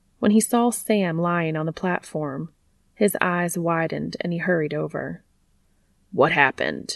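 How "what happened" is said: insistent, demanding, much lower. A man sees Sam lying on the platform and hurries over, demanding. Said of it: "He demanded".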